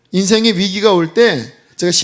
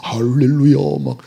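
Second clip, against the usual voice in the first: affected, solemn, pious put-on preacher voice; 5 semitones lower than usual. Preacher showing the pretend-holy voice he avoids: affected holy voice. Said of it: "막 그 홀리보이스 있잖아요, 이렇게".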